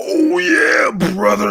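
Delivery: very high, loud, all-out scream. Imagining playing as Macho Man Randy Savage, screaming like Macho Man Randy Savage. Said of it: "while I'm screaming that".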